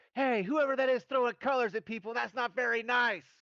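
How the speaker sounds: shrill, loud, very high shouted call. In a tabletop game, a player has their character yell out: yelling.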